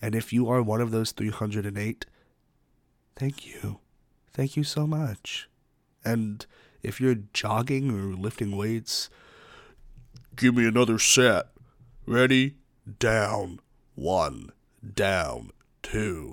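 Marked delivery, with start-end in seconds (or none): 10.3-16.3 very slow, deliberate, drawn-out announcer count, recorded-sounding. Calling out exercise reps for listeners at the gym: impression of the pacer test recording. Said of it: "That's my impression of the, uh, pacer test".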